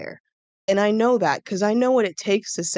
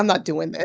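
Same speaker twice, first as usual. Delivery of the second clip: put-on exasperated, resigned giving-up tone; 2 semitones lower than usual. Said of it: "just exasperated, giving up".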